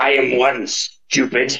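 snarling creature voice. Narrating a creature forced to the ground answering a question, snarling creature voice. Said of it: "it kind of snarls at you from the ground".

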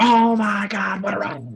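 raspy, drawn-out, high-pitched and slow. Retelling a commentator's call of an entrance: raspy Vince McMahon voice. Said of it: "And you hear the raspiness".

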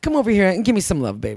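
playful, sweet, teasing, sweet-talking tone. Recalling how he used to talk to her, imitating a teasing sweet tone. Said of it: "it was teasing".

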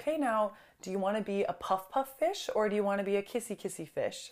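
soft, hushed stage whisper, half-whispered. Retelling how a mom spoke to her cranky child: imitating a half-whisper. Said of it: "whispered to her".

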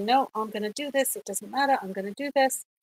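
ordinary talk

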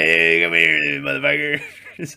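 bad, scratchy, rough, creaky rasping character voice. Trying a Beetlejuice voice while discussing the movie: Beetlejuice voice. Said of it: "I can't do Beetlejuice, but isn't that, that's how he sounds".

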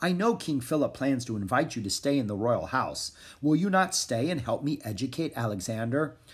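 ordinary delivery

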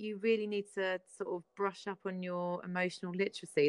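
ordinary talk

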